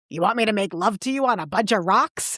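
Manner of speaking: put-on sudden Bronx accent. Describing a film character who slips out of his cultivated voice: Bronx accent. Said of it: "he's like a guy from the Bronx".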